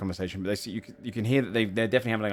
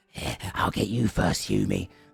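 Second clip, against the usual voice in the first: slow, creaky, rough-edged, taunting goblin voice. Storyteller describes goblins arguing and trading insults; one speaks in a goblin voice. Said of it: "goblins being like".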